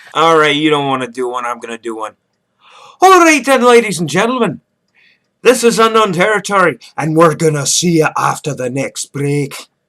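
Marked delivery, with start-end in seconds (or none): 3.0-9.5 loud, awful, bad put-on Scottish accent. Host doing a voice for the audience, signing off before the break, awful fake Scottish accent. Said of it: "That's an awful accent".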